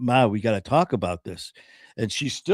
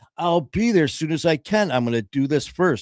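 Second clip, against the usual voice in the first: mock, pitched-up, mildly aggravated, put-out tone; 5 semitones higher than usual. Retelling your mom's reply when you urged her to come to the hospital: imitating mom's aggravation. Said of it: "she was getting a little aggravated with me".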